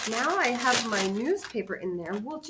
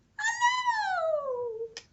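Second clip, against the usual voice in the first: very high voice, much higher pitch. Leading a hello game, saying it as high-pitched as possible: high-pitched. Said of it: "say hello as high-pitched as we can".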